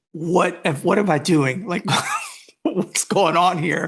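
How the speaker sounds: acted voice, almost crying, near tears. Telling a Seattle story on a podcast, acting out almost crying. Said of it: "like almost started crying".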